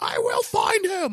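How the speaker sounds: angry villain voice, slow, very high, furious. Retelling a handcuffed villain's threat at a tribunal: imitating an angry villain. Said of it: "He's all pissed off".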